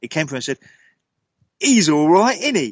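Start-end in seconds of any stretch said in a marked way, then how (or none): 1.6-2.7 put-on high, raised child's voice in real Cockney. Retelling a ghostly voice heard on a recording: imitating a cockney child's voice. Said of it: "In a real Cockney accent".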